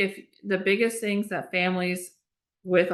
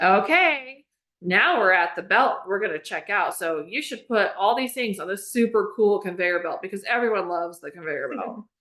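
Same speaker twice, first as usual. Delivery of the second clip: normal talking voice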